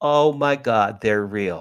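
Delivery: tearful, crying, exclaiming voice. Retelling seeing a flashing light and crying: retelling own crying words. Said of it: "Now I'm crying".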